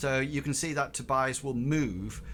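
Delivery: normal talking voice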